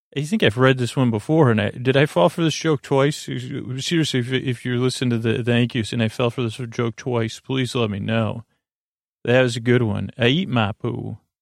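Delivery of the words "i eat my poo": very slow, drawn-out southern drawl. Reading a listener's joke aloud: southern accent. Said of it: "it's like a southern accent".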